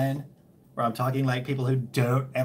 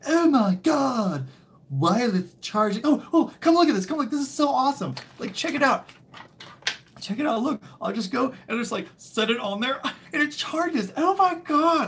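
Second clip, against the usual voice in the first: mock-amazed gushing, much higher and louder; 12 semitones higher, 3 dB louder than usual. Speaker acts out how people coming in will react: mock-amazed gushing. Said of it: "People are going to come in and be like".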